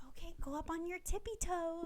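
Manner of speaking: inviting, high-pitched dance-teacher voice. Showing how their voice goes up when they teach, a high-pitched teaching voice. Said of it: "voice does go like two octaves higher when I teach".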